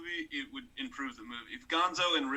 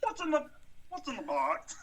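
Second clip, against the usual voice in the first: very high put-on frog-puppet voice; 11 semitones higher than usual. Doing a movie line as asked: Kermit the Frog voice. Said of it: "Give me a Kermit one".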